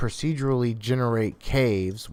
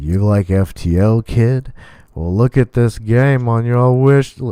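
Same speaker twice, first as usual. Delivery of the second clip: put-on cowboy drawl, louder; 11 dB louder than usual. Voicing a store wish list recommending a game: John Wayne impression. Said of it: "I went into a John Wayne impression for Steam".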